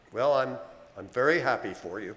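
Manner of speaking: unconvincingly happy. Telling his daughter he is glad about her boyfriend, not sounding happy. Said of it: "You don't sound happy".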